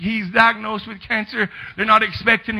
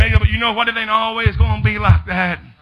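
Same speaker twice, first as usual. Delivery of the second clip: ordinary delivery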